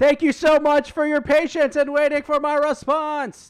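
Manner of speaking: booming, very loud, very high, shrill mock yell. Reading out an email as if typed in bold: mock loud shouting. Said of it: "That was That was loud".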